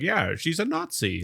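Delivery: mock nonchalant, offhand, very slow and drawn out. Retelling a film scene where the father answers: imitating a nonchalant reply. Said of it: "nonchalantly, he's like".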